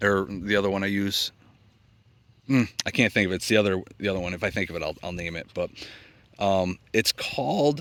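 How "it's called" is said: voice breaking mid-word, pitched high. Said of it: "my voice is cracking".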